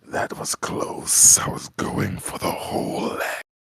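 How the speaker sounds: loud hissing creature voice. Narrating a fantasy battle, voicing Pale Lady, hissing. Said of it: "she hisses".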